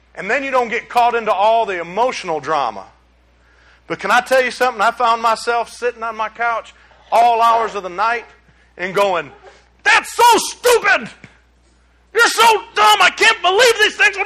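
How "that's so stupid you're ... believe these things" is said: mock, very high-pitched yelling. Recalling late nights on the couch watching politics, retelling yelling at the TV. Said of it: "I'm yelling at the TV!".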